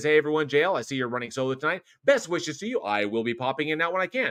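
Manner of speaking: plain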